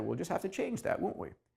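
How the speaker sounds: soft, quick, breathy Texas twang. Quoting what she said back then, in her Texas accent. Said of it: "in her in her Texas accent".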